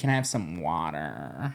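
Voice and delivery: put-on very low, hushed American accent. Retelling a mother's story of her daughter asking for water, in an american accent. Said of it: "now they're starting to get an American accent".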